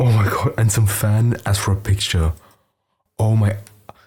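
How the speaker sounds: holding back laughter. Speaker retells a story to listeners while holding back laughter. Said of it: "using every fucking out of my body to not laugh".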